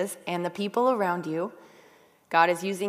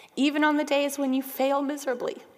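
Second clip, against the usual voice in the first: high, tearful voice on the verge of tears; 7 semitones higher than usual. Addressing listeners right after apologizing that they are going to cry, about to cry. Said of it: "I'm going to cry".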